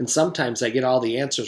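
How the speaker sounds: ordinary delivery, nothing marked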